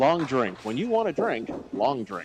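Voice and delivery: radio commercial announcer read. A speaker plugs the sponsor, in an announcer voice. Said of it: "You only get my announcer voice once for that".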